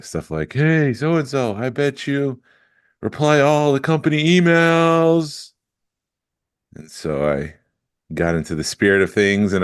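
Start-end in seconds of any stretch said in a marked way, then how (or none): 0.5-5.5 high, slow, mediocre mock heckler yell. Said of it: "this guy yelling the most mediocre trash talk".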